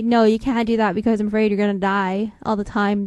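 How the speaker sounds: ordinary talk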